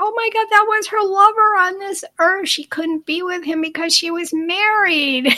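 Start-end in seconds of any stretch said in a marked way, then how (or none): 0.0-2.5 acted out, high-pitched screaming outburst. Retelling how the lady reacted to the message: imitating someone screaming. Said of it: "She started, like, screaming".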